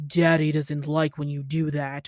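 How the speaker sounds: low, deep, commanding, dominant voice. Mocking how TikTok kink videos sound: imitating a deep-voiced dom. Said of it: "dudes with the deep voices going".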